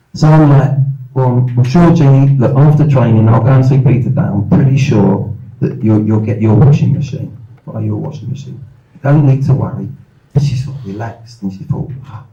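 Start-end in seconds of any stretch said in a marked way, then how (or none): none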